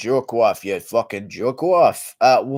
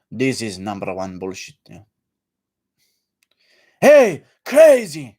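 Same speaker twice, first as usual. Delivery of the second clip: put-on angry voice with Russian accent; 2 semitones lower, 3 dB louder than usual. Imitating Khabib when he gets a bit angry: angry Khabib impression. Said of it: "that's Khabib when he's a bit angry".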